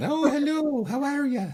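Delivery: thickened, exaggerated Irish accent, pitched very high. Joking about strengthening their own accent: exaggerated Irish accent. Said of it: "strengthen it".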